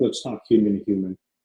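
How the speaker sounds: ordinary delivery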